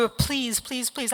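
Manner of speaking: mock, acted-out begging, pleading tone. Retelling being refused a reason, retelling begging. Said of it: "I was begging like I was at the post office".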